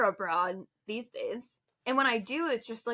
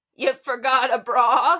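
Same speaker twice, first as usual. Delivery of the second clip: acted-out yell, louder; 10 dB louder than usual. Recounting the speaker's grandfather yelling across a hill, retelling a yell. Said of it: "he just yells to me".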